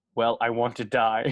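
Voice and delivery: expressionless, classic dry deadpan delivery. Recapping a film scene, the speaker delivers the character's reply in classic Bill Murray deadpan. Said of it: "In classic Bill Murray deadpan".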